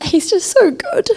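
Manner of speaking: close to tears. Sharing what moved them in the talk, weepy, close to tears. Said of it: "I'm really weepy today".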